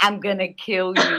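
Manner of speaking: hushed whisper. Retelling what a friend in bed whispered: imitating someone whispering. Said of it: "as she's whispering".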